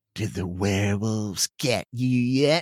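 evil-sounding whisper. Reading a story aloud, the narrator voices one character sneaking up on another, evil-sounding whisper. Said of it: "In an evil-sounding voice, he whispers".

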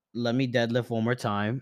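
ordinary delivery

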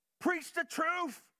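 acted, very high, shrill drunk man's scream. Retelling how a drunk man stood up in church: imitating a drunk man screaming. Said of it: "this man stands up and screams".

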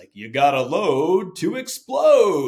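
booming, very loud, very slow, drawn-out high yell. Remembering a man's plyometrics saying the guys mocked; booming Rob Hartman voice. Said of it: "in this booming Rob Hartman voice".

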